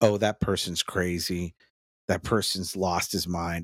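ordinary talk

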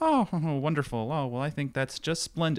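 deliberately corny, cutesy, high put-on character voice. Act out the persona he would perform, corny on purpose, in a corny high-pitched persona voice. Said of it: "kind of a high pitched voice".

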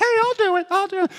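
very high soprano-register voice. Retelling volunteering for a challenge in front of the coaches: soprano voice. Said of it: "maybe I shouldn't have used my soprano voice".

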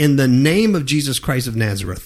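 usual speaking voice

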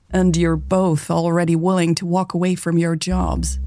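plain

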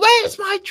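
very high, loud character voice that falls short. Retelling a scene, trying a Frieza voice: attempted Frieza voice. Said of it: "I can't do his voice".

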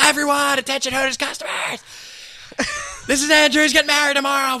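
put-on, mock, very high shouting. Retelling a server's announcement to the customers: imitating someone yelling. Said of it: "I need to yell this for effect".

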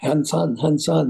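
normal talking voice

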